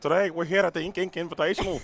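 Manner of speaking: put-on accent sounding Scottish. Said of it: "Why do you sound Scottish?".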